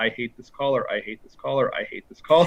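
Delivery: put-on mumble, under the breath. Retelling how Joseph acts while putting on the costume: imitating Joseph mumbling under his breath. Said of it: "he just mumbles under his breath".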